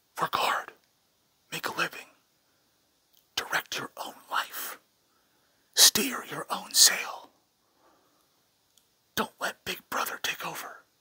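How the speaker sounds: hushed whisper. Speaker addressing listeners, whispering. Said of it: "I honestly don't know why I'm whispering".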